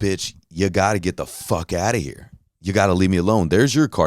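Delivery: acted upset voice, getting upset. Retelling a man telling a drunk woman to get out of his car, imitating someone getting upset. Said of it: "He's starting to get upset".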